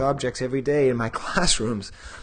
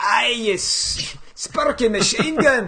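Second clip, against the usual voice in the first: loud, very high, raised put-on Scottish brogue; 10 semitones higher, 5 dB louder than usual. Speaker repeats the exclamation as a Scottish insult, in a mock Scottish accent. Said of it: "It's like a Scottish insult".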